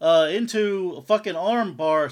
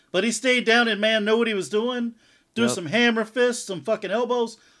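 ordinary delivery

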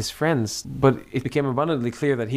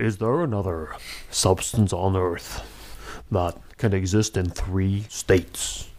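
super deep documentary voiceover narration; 4 semitones lower than usual. Recounting a documentary that starts with a narrator; super deep The Secret of Water narrator. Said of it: "starts with a super deep voice that says".

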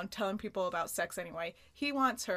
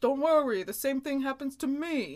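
loud, pitched-up Italian-American impression voice; 6 semitones higher, 6 dB louder than usual. Retelling a TV scene, voicing Joey's line in an Italian-American voice. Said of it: "That's pretty clearly it's an Italian".

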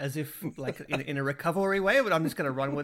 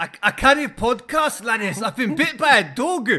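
put-on Scottish accent, much higher, louder; 7 semitones higher, 8 dB louder than usual. Quoting a message he sent them, in a Scottish voice. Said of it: "imagine that in this Scottish voice".

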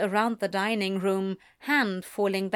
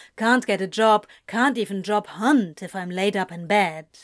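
ordinary delivery

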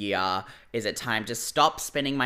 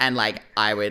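usual speaking voice

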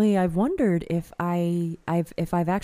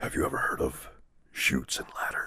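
lower, quieter put-on gruff hero voice; 9 dB quieter than usual.

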